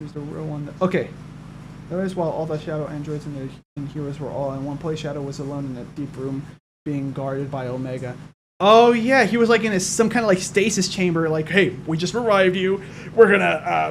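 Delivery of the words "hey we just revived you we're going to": evil genius, mad scientist villain character voice. Retelling a scene where Shadow is revived in a stasis chamber: Eggman voice. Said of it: "I went like an Eggman voice".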